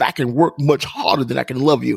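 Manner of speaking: ordinary talk, nothing marked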